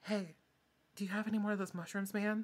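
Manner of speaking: whispering. The speaker voices a friend who approaches the listener; whispering.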